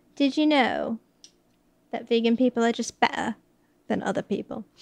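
put-on British English accent. Quoting a film line, in a put-on British accent. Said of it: "And now I'm British vegan".

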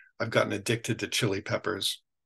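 ordinary delivery

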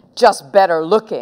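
rude tone. Ralph answers Henry's remark about one of the heads, speaking rudely. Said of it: "said Ralph rudely".

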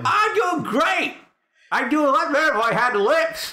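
very high, silly skeleton puppet voice. Answering another player while voicing Scully: voicing Scully the skeleton. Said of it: "That's not the voice I would think of that a skeleton skull has".

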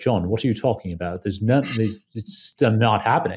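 put-on British accent. Speaker quotes a man in energy markets answering his question; british accent. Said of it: "he had a British accent".

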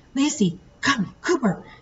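high, frightened call, fear unmistakable. A man calls to Lacey after the snake strikes her, fearful. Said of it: "There was no mistaking the fear in his voice".

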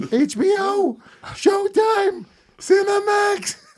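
excited, thrilled, very high squealing creature voice. Quoting the end of Gremlins 2, mock-excited high Mogwai voice. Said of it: "He's excited about getting cable. He's like".

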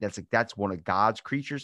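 ordinary talk

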